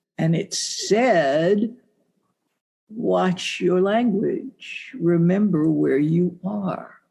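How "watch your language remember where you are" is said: imitated deep, resonant, gentle, mellifluous voice. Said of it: "that deep and mellifluous and beautiful and gentle and resonant".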